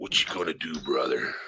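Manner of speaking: over-the-top, hammed-up wrestler promo voice. After asking the others to hold on while you get your voice straight, do a Macho Man Randy Savage voice. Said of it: "Let me get my voice straight".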